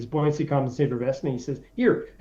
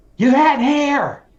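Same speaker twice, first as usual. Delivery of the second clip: put-on mimicked teenage girl voice, higher and louder; 11 semitones higher, 7 dB louder than usual. Retelling what she said on seeing an old video: imitating a sixteen-year-old girl's voice. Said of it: "with her beautiful sixteen-year-old voice says".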